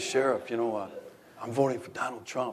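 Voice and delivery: put-on whisper. Retelling supporters coming up to quietly confide: imitating someone whispering. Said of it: "People would come up and whisper to me".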